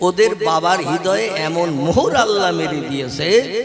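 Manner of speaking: normal talking voice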